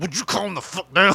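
talking through gritted, clenched teeth. Acting out holding someone's wrists: through gritted teeth. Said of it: "that little teeth gritted".

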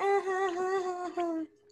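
high, soft fake laugh.

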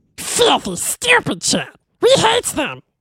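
bitter, resentful put-on character voice. Turning on the chat during the game: bitter Gollum voice. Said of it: "He was especially bitter".

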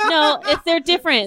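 talking through laughter.

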